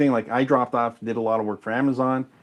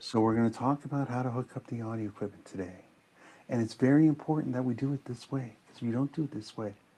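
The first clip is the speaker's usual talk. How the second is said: gentle, soft, calm therapist-style voice; 8 dB quieter than usual. Imitating a soft-spoken audio tutorial presenter explaining equipment hookup: soft-spoken Audio University imitation. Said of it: "he sounds like a therapist".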